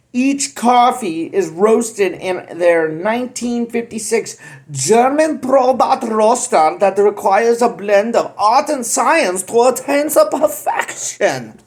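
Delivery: light, put-on German accent. Reading a coffee roaster's description, slight german accent. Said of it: "my little German accent there".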